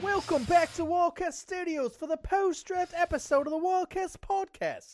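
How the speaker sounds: fake put-on British accent, pitched very high. Podcast host opening the post-draft episode, in a fake British accent. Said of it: "that was British".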